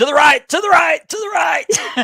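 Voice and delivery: put-on very high, repeated hollering. As Carmine drives to run over Gianni, act out the onlooker, imitating Triple H yelling. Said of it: "Triple H is yelling".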